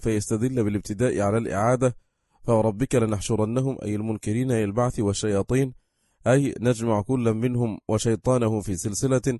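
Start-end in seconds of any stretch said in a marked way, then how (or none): none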